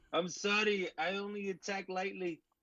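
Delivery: put-on Jamaican accent. Speaking in character during a fantasy fight, in a Jamaican accent. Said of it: "now you have a Jamaican accent?".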